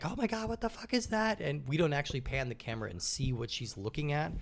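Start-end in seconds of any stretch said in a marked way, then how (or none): 0.0-1.4 very high-pitched, put-on, terrified shrieking scream. Describing a famous movie scene, imitating a woman screaming. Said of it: "you hear her just screaming like".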